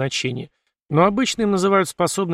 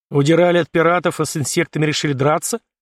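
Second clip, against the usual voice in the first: plain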